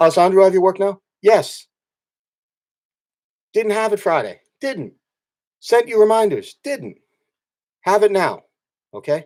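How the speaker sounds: exasperated, fed-up tone. Speaker pressing someone about work marked missing: frustrated. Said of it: "If you can't sense it in my voice".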